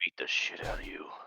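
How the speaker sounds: muttered under the breath. Muttering a line during a role-play game: said under the breath. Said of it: "I said it under my breath".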